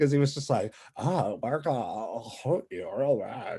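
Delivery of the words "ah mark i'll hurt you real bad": very slow, marble-mouthed, mumbling drawl. Imitating the Joker talking with grills in: Joker mumbling through grills. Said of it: "can he not talk with those grills in?".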